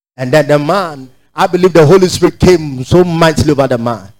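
ordinary talk

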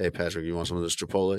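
hushed, sly delivery. Retelling how they offer food to coworkers: imitating a discreet offer like selling drugs. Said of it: "I say very discreetly, like, "Hey," like, I'm selling drugs".

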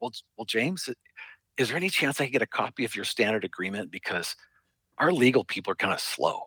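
secretive, confiding tone. Retelling what a guy asked him, as if telling a secret, retelling a lowered, secretive voice. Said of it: "he kind of lowers his voice and he goes".

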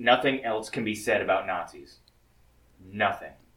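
mock-serious, faux-solemn deadpan. Ending talk on a news story, mock serious. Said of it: "he said that so seriously".

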